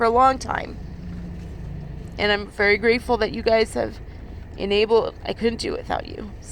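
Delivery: soft, tearful voice, close to crying. Thanking the listeners, the speaker is about to cry. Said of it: "I'm going to cry".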